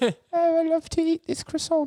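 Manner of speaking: fake British accent, high pitch. Acting out a deleted Pirates of the Caribbean croissant scene, Keira Knightley impression. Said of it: "an impression of a British person eating a croissant".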